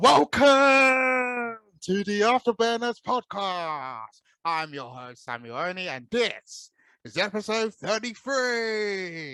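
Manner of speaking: booming, high, drawn-out ring announcer voice. Podcast host opening the episode, doing a boxing ring announcer impression. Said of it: "I'm trying to do that impression of the boxer's commentator".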